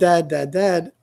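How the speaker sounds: plain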